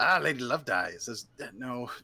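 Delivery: put-on, attempted Scottish accent. Taking a turn after announcing the need for one, in a Scottish accent. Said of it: "I gotta do a Scottish accent".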